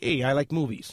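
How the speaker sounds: plain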